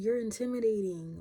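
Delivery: mock, loud, blurted, shouted-out speech. Retelling what a girl at the back of a meeting shouted: imitating someone shouting. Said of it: "she shouted it out".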